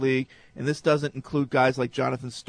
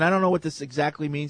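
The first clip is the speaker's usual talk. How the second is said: ordinary talk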